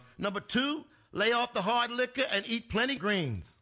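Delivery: ordinary delivery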